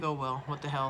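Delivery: normal talking voice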